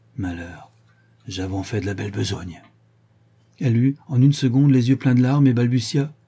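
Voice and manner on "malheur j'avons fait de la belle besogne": half-whisper so low it's scarcely heard. Clinging to her brother, afraid someone might hear, she speaks in a barely audible half-whisper. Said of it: "si bas qu'elle-même l'entendit à peine".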